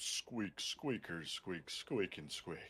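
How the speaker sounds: soft, whispery, breathy, hushed dopey cartoon voice. Doing a squeaking bit that a listener says sounds like Kronk, in a Kronk voice. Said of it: "actually sound like Kronk".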